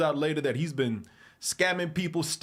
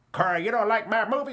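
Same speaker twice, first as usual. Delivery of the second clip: put-on grandma voice, much higher; 6 semitones higher, 3 dB louder than usual. Imagining the movie's maker asking if they dislike his movie, Madea voice. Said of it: "That's the Madea voice".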